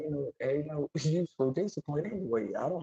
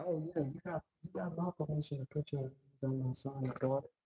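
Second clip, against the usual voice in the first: easygoing, casual, offhand delivery; 6 dB quieter than usual. Retelling how certain parents talk when dropping kids off: imitating parents who hand off discipline.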